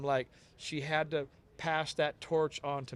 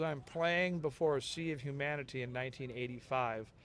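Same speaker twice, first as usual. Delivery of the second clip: ordinary talk, nothing marked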